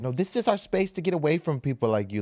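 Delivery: put-on, drawn-out, high, slow half-shout. Acting out the girls in the viral video: imitating someone yelling. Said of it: "yelling at them".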